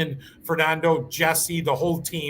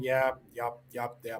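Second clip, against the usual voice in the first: low, flat, unexcited monotone; 4 semitones lower, 8 dB quieter than usual. Showing how it sounds without being excited, flat monotone. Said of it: "It would just be the monotone".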